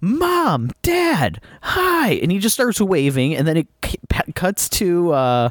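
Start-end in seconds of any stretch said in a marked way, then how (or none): 0.0-2.1 very high-pitched, terrible bad acting. Retelling how a pastor greets his parents in a film: imitating terrible acting. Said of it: "in the worst acting possible".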